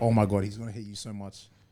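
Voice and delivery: low half-whisper spoken right at the ear. Telling how a girl kept half-whispering in his ear, retelling a half-whisper.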